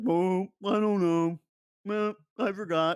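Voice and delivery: put-on sad puppet voice. Retelling what a man said when asked about a game, in a sad Muppet voice. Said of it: "Why do I sound like a sad fucking puppet?".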